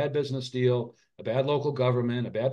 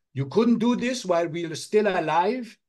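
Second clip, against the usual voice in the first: put-on motherly voice speaking in a Hungarian accent; 6 semitones higher than usual. Quoting what their mom would say to them; mom's Hungarian accent. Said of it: "I'm trying to do my my Hungarian accent".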